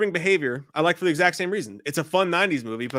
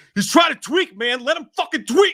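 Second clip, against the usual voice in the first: belted out high and loud. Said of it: "that's [name] with a great line from The Faculty".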